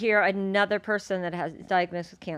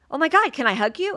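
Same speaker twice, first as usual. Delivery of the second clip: put-on excited starstruck gushing, higher pitch; 6 semitones higher, 3 dB louder than usual. Retelling meeting an admired person in a store: imitating own starstruck gushing. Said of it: "I was shaking like an idiot".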